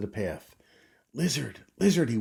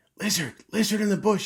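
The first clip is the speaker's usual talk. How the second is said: hurried, fast, very high, out of breath; 11 semitones higher, 6 dB louder than usual. Narrator reading Alexander calling for the lizard in the bush, said quickly. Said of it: "he said quickly".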